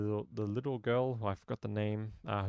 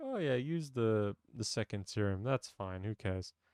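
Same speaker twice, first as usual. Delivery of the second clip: acted-out offhand, throwaway, carefree casual tone. Retelling what Zoe said about the serum: imitating Zoe, mock casual. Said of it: "she was casually like".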